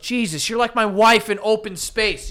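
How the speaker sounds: loud, high-pitched yelling.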